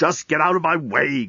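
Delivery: irritated growling voice. A man blocked by a bowing robot waiter growls at it. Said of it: "growled Leovinus".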